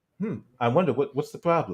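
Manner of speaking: utterly unbothered, super calm, soft wondering tone. Retelling how a debater reacts to an angry guest: super calm, imitating David Pakman. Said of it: "he does this thing where he just remains, like, super calm".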